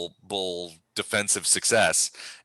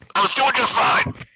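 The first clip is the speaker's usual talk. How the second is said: put-on loud, very high-pitched cranky, grumpy old man voice; 13 semitones higher, 7 dB louder than usual. Voicing a man inside a house answering rescuers: grumpy old man's voice. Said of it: "a fairly grumpy old man's voice".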